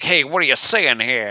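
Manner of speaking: put-on old-time, fast-talking 1940s-60s wise guy voice. Describing how characters talk in a film, mimicking 1940s wise guy talk. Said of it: "half 1940s wise guy talk and then half".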